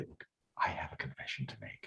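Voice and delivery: secretive, confiding, hushed conspiratorial whisper. Retelling how he greeted a new class: retelling own conspiratorial tone. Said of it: "very conspiratorially, I come back and say".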